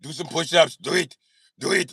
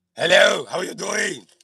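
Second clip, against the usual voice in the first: put-on Austrian accent; 3 semitones higher than usual. Greeting listeners in Austria: Arnold Austrian accent. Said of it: "It's my Austrian accent".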